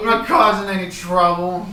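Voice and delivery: put-on drunken voice, loud and high-pitched.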